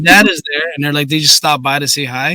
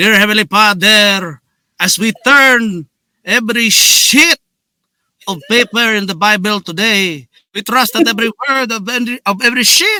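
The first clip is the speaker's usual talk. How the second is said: mock Filipino accent, pitched higher; 6 semitones higher than usual. Retelling a comedy bit, imitating a Filipino pastor praying. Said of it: "making fun of my Filipino pastor".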